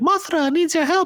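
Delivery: put-on tiny, very high girlish voice. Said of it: "and they'd be like".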